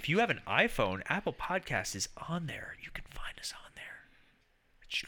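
whispered speech. Telling listeners where to find the podcast, whispering. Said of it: "Why are we whispering?".

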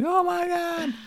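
mock very high-pitched, excited squeal of delight. Recounting jumping up and down with a friend after winning a trip: retelling an excited scream. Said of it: "screaming like".

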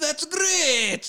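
put-on strange, almost French accent, very high. Imitating the father in a movie, who almost sounds french. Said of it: "At times he almost sounds French also".

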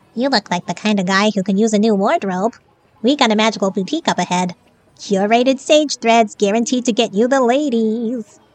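squeaky little creature voice, sales-pitch style. A tiny creature lands on a man's shoulder and speaks to him, squeaky voice. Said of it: "asked in a squeaky voice".

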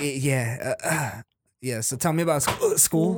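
acted trembling voice. Retelling his own past words on a phone call: imitating own shaky voice. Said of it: "my voice started sounding a little, like, shaky".

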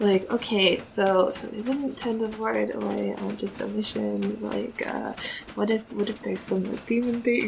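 muttering under breath. During a game, voicing a character watching someone meditate: muttering under her breath. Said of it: "kind of very under her breath".

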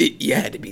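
rough, raspy put-on voice. Imagining a line Michael Keaton would say, in a raspy Michael Keaton voice. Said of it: "it would be in that same raspy voice".

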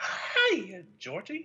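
creepy, singsong voice. Recreating the first scene when Georgie sees him, Pennywise voice. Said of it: "And that's my impression".

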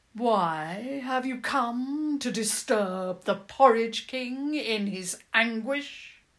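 loud, slow, wild, with "why" stretched out. Narrator voicing a strange figure confronting those who approach, Porridge King's long, slow, wild voice. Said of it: "he said in a long, slow, wild voice".

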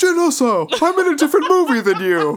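very high, loud, weird voice. Recapping a movie scene for listeners, Forest Whitaker impression. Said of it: "Forrest Whitaker is just like".

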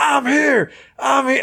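very high, heated, stretched-out yell, acted out. Retelling a face-to-face confrontation, imitating Mahomes yelling. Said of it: "and he's yelling".

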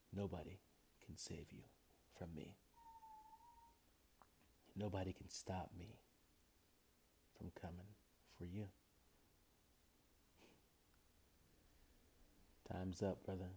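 quiet, hushed whisper. Performer addressing an opponent before a battle, whispering. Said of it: "Why was he whispering?".

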